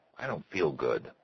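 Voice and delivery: ordinary talk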